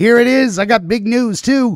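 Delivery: loud, high-pitched shouting right into the mic. Host opens the episode announcing big news, shouting into the microphone. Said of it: "I'm shouting into the microphone".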